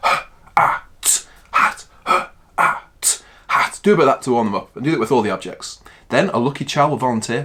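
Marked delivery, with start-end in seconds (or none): 0.0-3.8 very slow, segmented, robotic sounding out. Showing how to sound out a word for children: robotic sounding out. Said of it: "you sound it out like a robot".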